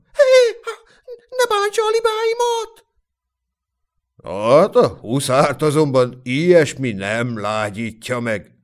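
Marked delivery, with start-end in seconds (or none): 0.2-2.9 very high, panicky, frightened shout. The goose-herding woman cries out as the hussar charges; shouted in fright. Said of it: "ijedten kiabálta".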